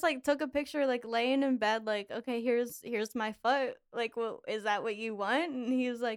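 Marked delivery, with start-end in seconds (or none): none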